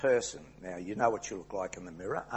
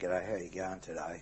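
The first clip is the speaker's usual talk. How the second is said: very low, flat, droning monotone on one note; 4 semitones lower, 4 dB quieter than usual. Showing why tone matters, a greeting in a very low monotone voice. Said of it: "a very low monotone voice".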